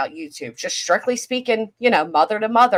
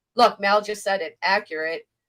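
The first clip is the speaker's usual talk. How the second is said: normal talking voice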